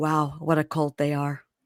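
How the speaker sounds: mock muttered aside. Retelling what someone said as another person walked out: imitating a mutter under breath. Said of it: "Sarper says under his breath".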